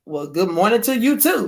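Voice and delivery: ordinary talk, nothing marked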